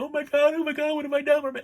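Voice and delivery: mock screaming. Recapping a bad movie's ending, the speaker acts out the woman: mock screaming. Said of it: "she starts screaming".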